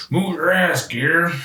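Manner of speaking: barked military-style yell. Quoting a multiplayer voice line of an old military character who yells: Colonel Hoffman impression. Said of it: "That's my impression".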